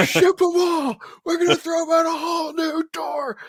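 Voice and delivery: put-on yelling. Retelling shouting down from a ledge to a buddy: retelling a scream. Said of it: "I scream down to him".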